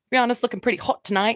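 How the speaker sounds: bad put-on Irish accent. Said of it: "Sorry about my terrible Irish accent".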